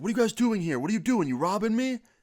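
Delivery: shrill, very high, startled yell. Retelling a man with a shotgun yelling back: imitating a man yelling. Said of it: "And he yells back".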